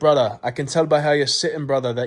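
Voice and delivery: put-on Jamaican accent. Retelling what a man said to him while staring, Jamaican accent. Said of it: "still in the Jamaican accent".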